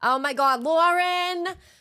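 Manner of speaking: Long Island voice, very high, drawn-out cry. Pretending to be own mother: imitating Kathy. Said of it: "even when I pretend to be Kathy, my mom".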